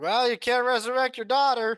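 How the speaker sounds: put-on very loud, very high drunken outburst. Suggesting a line for a drunk character being carried away: drunken voice. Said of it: "you drunkenly just be like".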